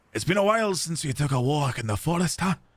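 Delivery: put-on Scottish-accented voice. Voicing a game character, giving him a Scottish accent. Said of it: "did I give him a Scottish accent?".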